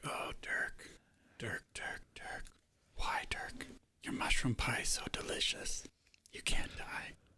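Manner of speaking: whispered, hushed mutter under the breath. Player's character sees Dirk in a cage beside the goblins, said under the breath. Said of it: "I'm just saying this like under my breath".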